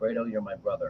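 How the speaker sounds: very quiet, hushed, barely voiced. Quoting a line from Godfather one and two: Al Pacino impression. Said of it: "Godfather one and two, it's like".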